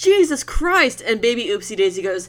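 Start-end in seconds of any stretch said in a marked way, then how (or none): 0.0-1.0 shrill, very high, shrieking yell. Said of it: "She yells".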